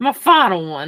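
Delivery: speaking in a Southern accent. Still in the bit, announcing the final one: Southern voice. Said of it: "I'm still in Southern voice".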